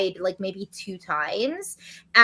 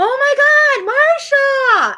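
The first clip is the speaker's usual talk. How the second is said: mock-excited, much higher, louder, slower; 9 dB louder than usual. Recounting how a man entered a secret room, the speaker is retelling an excited exclaim. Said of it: "there was more excitement in his voice".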